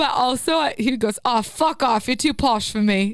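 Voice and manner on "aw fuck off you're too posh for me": put-on failed Irish accent slipping into British sound. Retelling what a man said to the speaker: failed irish accent, came out british. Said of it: "You just did a, a British".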